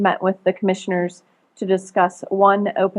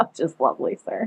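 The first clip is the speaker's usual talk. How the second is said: deadpan, sarcastic delivery; 5 dB quieter than usual. Answering a question about how the technology is working this morning: sarcastic. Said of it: "I hope you can sense the sarcasm in my voice".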